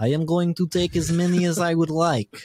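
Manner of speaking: put-on Russian accent, slow with drawn-out words. Recalling trick-or-treaters grabbing candy, the speaker voices one in a mock russian accent. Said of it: "that's like Russian".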